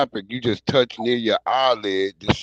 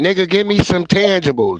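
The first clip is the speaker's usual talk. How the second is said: loud, high-pitched talking-cat voice; 8 semitones higher, 5 dB louder than usual. Joking about what the cat would say: voicing the cat. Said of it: "The cat like".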